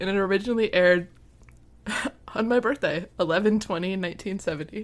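laughing while talking. Reading out an episode's air date while laughing hard. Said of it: "I'm laughing so hard".

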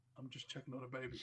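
mock mumbling. Retelling how a man mumbled to a woman holding a baby: retelling a mumble. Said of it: "he mumbles to her".

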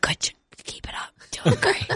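soft voice with audible smile. Retelling being drugged on live tv, imitating own quiet smiling voice. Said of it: "quiet with my shoulders up, just smiling at everyone".

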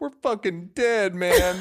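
high, tearful words coming through crying. Retelling what a passing man said to him, imitating someone crying. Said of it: "I realize he's crying".

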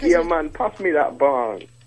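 put-on Jamaican accent. Asked to do the Jamaican accent right now: put-on Jamaican accent. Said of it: "I want to hear your Jamaican accent right now".

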